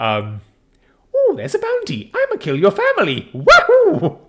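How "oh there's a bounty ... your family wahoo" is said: very high, loud, swooping video-game hero voice. Joking about voicing crowd characters: Super Mario voice. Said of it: "I'm just gonna do fucking Super Mario".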